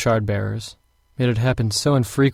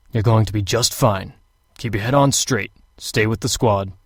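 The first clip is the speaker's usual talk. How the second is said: gruff, deep, growled but reassuring voice. Narrator reads Dallay answering a recruit with three months' training, in Dallay's gruff voice. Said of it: "Dallay had a gruff voice".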